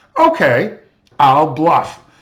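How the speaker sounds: acted, very grand, loud, declaring delivery. Describing a little girl in a card game, giving her mock-grand announcement. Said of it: "she says very grandly".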